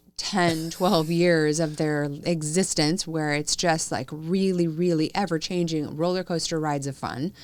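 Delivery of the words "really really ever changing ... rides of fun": ordinary talk, nothing marked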